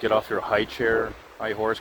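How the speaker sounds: usual speaking voice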